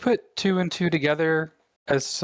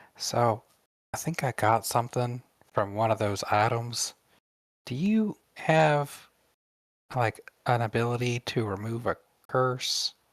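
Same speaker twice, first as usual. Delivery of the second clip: put-on hushed, stage half-whispered delivery; 4 semitones lower, 4 dB quieter than usual. Voicing a character who reaches out to another for help: half-whispering in character. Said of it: "kind of whispering".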